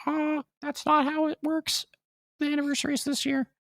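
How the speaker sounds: squeaked out at very high pitch. Speaker covering a Kirby game announcement: high-pitched Mickey Mouse voice. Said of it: "I was just high pitched".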